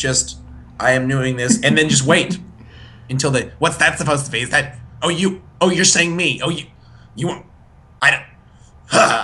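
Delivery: put-on angry voice. Describing how someone reacts, doing an impression of an angry person. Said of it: "That's my impression of the angry person".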